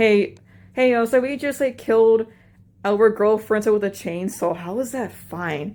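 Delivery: ordinary delivery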